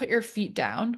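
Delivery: serene, composed, acted-out calm voice. Retelling a voice heard in the mind while panicking, imitating a calm voice. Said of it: "I heard this calm voice so loudly in my mind go".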